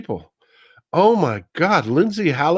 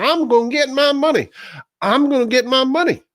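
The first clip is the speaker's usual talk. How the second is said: put-on high, shrill screaming repeated over and over; 7 semitones higher than usual. Mocking a senator who insists on getting paid: imitating Lindsey Graham screaming. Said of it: "Lindsey Graham screaming, running all over the hill, screaming".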